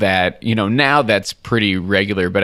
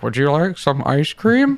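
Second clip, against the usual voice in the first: higher-pitched, playful comedic delivery; 6 semitones higher than usual. Retelling a comedian's bit, doing a George Lucas impression. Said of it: "he does a very funny George Lucas impression".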